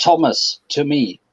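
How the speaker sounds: loud shout, pitched high. The narrator voices a character calling his companion over, shouting. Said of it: "Marcus will shout".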